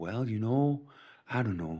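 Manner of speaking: soft, put-on Minnesota accent.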